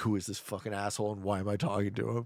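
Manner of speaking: put-on, fed-up, irritated grumble, losing patience. Retelling an interview bit, imitating an annoyed Buzz Aldrin. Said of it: "progressively more pissed off".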